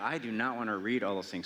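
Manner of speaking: ordinary talk, nothing marked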